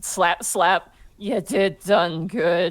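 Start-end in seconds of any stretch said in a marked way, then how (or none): 1.2-2.7 acted drunk, slurring speech. Voicing Abby dismissively touching a cheek: acted drunk speech.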